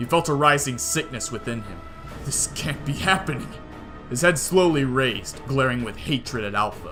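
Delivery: ordinary delivery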